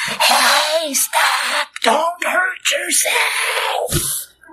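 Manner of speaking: tender, gentle, high-pitched, very slow and drawn out. Speaker imagining calling out to a man about to hurt himself, soft voice. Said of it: "I'd have cried with a soft voice".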